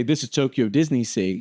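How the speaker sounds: ordinary talk, nothing marked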